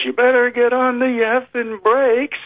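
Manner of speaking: very high, slow, drawn-out yell. Retelling the lieutenant's third command: imitating someone yelling. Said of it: "And then he yells".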